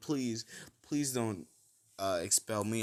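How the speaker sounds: acted weepy, tearful begging, near tears. Retelling a story scene where Hagakure begs not to be expelled: imitating Hagakure crying. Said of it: "she's kinda crying".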